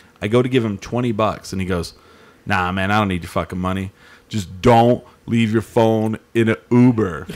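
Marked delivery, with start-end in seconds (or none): 2.5-7.3 put-on stern scolding voice. Retelling what a roadie said when handing back a phone: imitating a scolding dad. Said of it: "he just immediately goes into dad mode".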